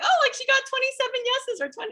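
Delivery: very high, excited, gushing squeal.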